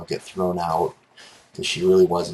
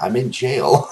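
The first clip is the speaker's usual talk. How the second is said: put-on crying voice, higher and louder; 5 semitones higher, 4 dB louder than usual. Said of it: "she's crying".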